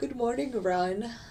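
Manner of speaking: said through a yawn. Greeting someone while looking at the market open, yawning. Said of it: "I don't know why I'm yawning".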